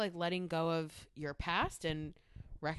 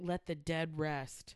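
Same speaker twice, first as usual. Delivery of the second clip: slow, really dramatic, drawn-out delivery. Retelling what Jean-Luc Picard says in the episode: imitating Picard's dramatic delivery. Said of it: "this really dramatic".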